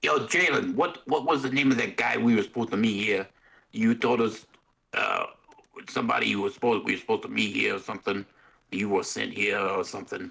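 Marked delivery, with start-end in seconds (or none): 0.1-8.2 loud yelling. Interrupting in character to ask another player a question: yelling. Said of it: "just gonna start yelling".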